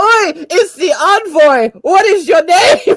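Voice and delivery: put-on Scottish brogue. Introducing their new role-play character to the group, fantasy Scottish accent. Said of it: "I don't know why I'm Scottish".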